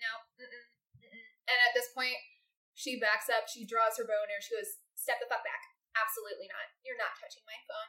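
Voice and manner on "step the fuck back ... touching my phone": threatening, hostile, aggressive tone. Voicing a character who draws her bow at a stranger: hostile refusal. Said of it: "No need to be so hostile".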